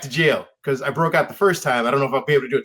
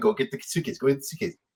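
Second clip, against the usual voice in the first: breathy, hushed whisper under the breath; 6 dB quieter than usual. Retelling a movie scene where a character whispers instructions: imitating someone whispering. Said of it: "whispering to him".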